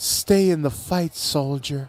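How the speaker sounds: stage whisper, close in to the ear. Describing what she whispers in your ear mid-fight, retelling a whisper. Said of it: "she whispers in your ear".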